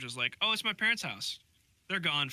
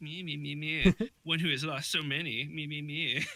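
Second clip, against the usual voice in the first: derisive, taunting, slow, drawn-out mocking parody tone; 3 semitones higher than usual. Retelling how Dresden mimicked a woman's words: mocking imitation of her. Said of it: "Mocking her".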